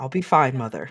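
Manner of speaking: whispered words. Voicing a son hugging his mother goodbye: whispering. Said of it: "whispers in her ear".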